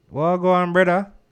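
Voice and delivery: very loud, high, phony put-on Jamaican accent. Retelling how people talk to you: imitating a put-on Jamaican accent. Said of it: "when people give you the Jamaican".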